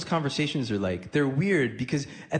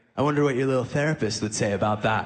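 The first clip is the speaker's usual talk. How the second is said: mocking, sarcastic tone; 3 semitones lower than usual. Retelling a phone call where the father ends with imitating a sarcastic dad. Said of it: "sarcastically, he'll be like".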